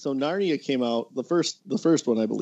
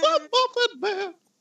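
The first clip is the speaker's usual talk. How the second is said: put-on gingerbread man voice, much higher. Joining in a bit with the others, calling out in a gingerbread man voice. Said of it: "That's a remarkably good gingerbread man voice".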